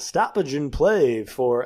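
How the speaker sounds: put-on stadium public address announcer voice. Retelling a stoppage in play, Scott Moak announcer voice. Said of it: "I'm doing it, ... I don't know why I'm doing that voice".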